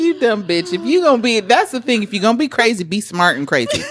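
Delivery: ordinary talk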